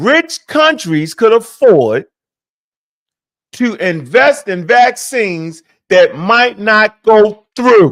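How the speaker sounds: very slow, word-by-word. Speaker tells the listener he will say this real slow, very slow. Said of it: "I'm going to say this real slow".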